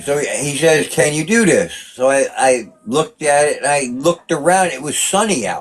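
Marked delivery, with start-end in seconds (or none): none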